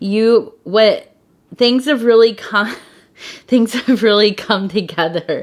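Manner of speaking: words broken up by laughter throughout. Speaker addressing listeners while their daughter is being silly nearby, laughing while talking. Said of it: "And I'm sorry, I'm laughing".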